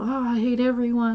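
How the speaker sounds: normal talking voice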